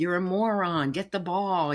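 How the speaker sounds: mild, berating shout. Retelling a parent at a football stadium screaming at his kid: imitating a parent screaming. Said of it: "screaming at his kid".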